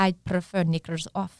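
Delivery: bad put-on Scottish accent. Retelling what a man said on the speaker's first day, bad scottish accent. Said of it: "He's like".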